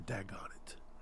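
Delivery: acted under-breath muttering. Imitating Brett Veach at every sack: muttering under breath as Brett Veach. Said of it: "under his breath".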